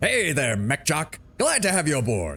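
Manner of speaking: hammy, exaggerated, high, swooping put-on voice. Welcoming a new mech jock aboard: Duncan Fisher voice. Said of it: "I have to try and do my best Duncan Fisher impression".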